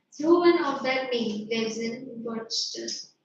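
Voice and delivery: ordinary talk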